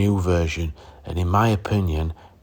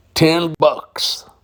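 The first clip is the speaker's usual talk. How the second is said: loud, high-pitched put-on American accent; 10 semitones higher, 5 dB louder than usual. Saying the price as American viewers might: put-on American accent. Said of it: "as my American viewers might say".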